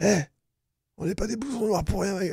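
aggressive, slangy tough talk. In a role-play, playing a street punk accosting passersby: aggressive street punk voice.

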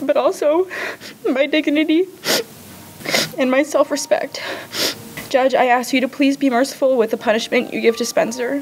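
high, tearful, sobbing, crying through the words. Addressing the judge and asking mercy for spencer, while sobbing.

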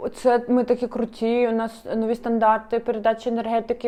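plain

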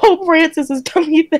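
laughing while speaking. Repeating the quoted response again to the other speaker, laughing while repeating a quote. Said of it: "I'm not trying to laugh at you".

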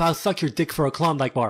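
plain

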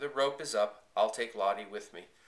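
ordinary delivery

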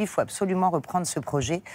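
ordinary talk

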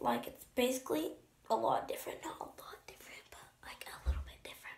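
hushed whisper. Filming an updated routine video, the speaker is whispering without knowing why. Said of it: "I don't know why I'm whispering".

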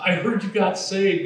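high, full-lunged holler at top of voice. Retelling a woman calling to him at Stater Brothers, imitating Faye yelling. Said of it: "she yelled it at the top of her voice".

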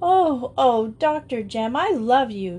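gasping. Joe, suddenly hugging the doctor, to him, gasped. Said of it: "she gasped".

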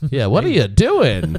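hokey radio host patter. Imitating how friends outside comedy sound when they call: cheesy daytime dj voice. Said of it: "They sound like a daytime DJ".

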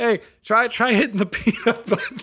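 very high, yelled robot voice shouting. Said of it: "just yells up".

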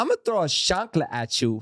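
high, swooping woman's voice. Retelling what a woman on the pod would say to John, doing an impression of her. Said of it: "She'd look at John and she'd go".

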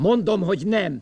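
very loud, shrill, high-pitched shouting. In a drama, a man answers anxious questions, shouting. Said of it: "Akkor miért kiabálsz?".

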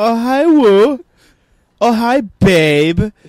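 very high, slow, with "babe" drawn out. Repeating the line in the same voice: Tommy Wiseau impression.

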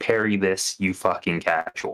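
hushed, whispered delivery. Player in a tabletop game, his character grabbing an enemy: whispering in his ear. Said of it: "I would like to whisper in his ear".

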